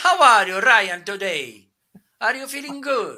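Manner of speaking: very loud, sing-song, swooping put-on Italian accent. Demonstrating a loudspeaker, greeting someone with a put-on Italian accent. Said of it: "I can speak with Italian accent".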